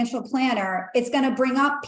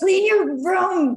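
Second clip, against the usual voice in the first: scolding, raised-pitch tone; 7 semitones higher, 3 dB louder than usual. Speaker advising listeners, giving an example in a scolding mother voice. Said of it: "like a scolding mother".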